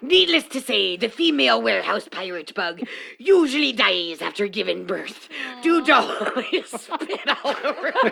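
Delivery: put-on buccaneer pirate voice. Performing a bit for the others, in a pirate voice. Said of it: "I have to close one eye to do the pirate".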